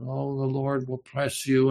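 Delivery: put-on syrupy tone. Describing how some people talk, imitating syrupy speech. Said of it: "They talk with a syrupy, a certain kind".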